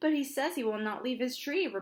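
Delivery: ordinary delivery, nothing marked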